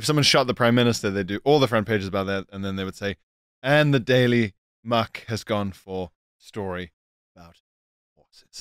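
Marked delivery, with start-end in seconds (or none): 3.6-8.6 falling, descending newsreader sign-off cadence. Imitating how newsreaders announce the last paper's story, in a descending voice. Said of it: "in that descending voice".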